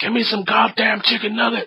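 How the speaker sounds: play-acted, very high-pitched flipping out. Retelling a drive-through story, imitating a woman flipping out. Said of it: "And the woman just flipped out".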